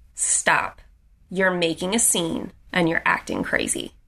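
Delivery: mock commanding, authoritative voice. Recounting a confrontation, quoting a man who told her to stop; imitating an authoritative tone. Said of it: "with so much authority".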